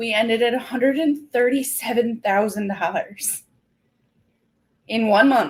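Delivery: fighting back tears, near tears. Telling a listener the month's sales total: holding back tears. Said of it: "I'm trying not to cry right now".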